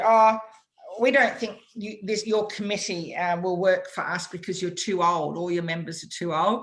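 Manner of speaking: usual speaking voice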